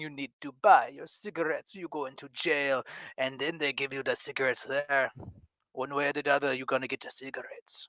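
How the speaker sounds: put-on Caribbean accent. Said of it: "kind of like a Creole Jamaican".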